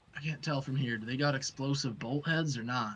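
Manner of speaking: quiet half-whispered aside. Voicing the quartermaster brushing past the captain: half-whispering. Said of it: "he just kinda whispers".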